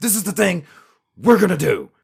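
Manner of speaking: high, halting, choppy speech. Show how he talks because he feels it is powerful, as an abrupt stop-start Alex Jones impression. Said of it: "abrupt stop and start way of talking".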